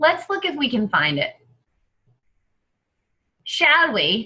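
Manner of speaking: fake put-on Australian accent with swooping pitch. Looking for a button on screen, joking: put-on Australian accent. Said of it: "That was my Australian accent".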